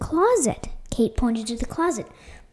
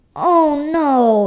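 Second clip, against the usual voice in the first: very loud, exclaiming outcry; 3 semitones higher, 10 dB louder than usual. A woman's glasses clatter to the floor, exclaiming. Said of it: "exclaimed Kate".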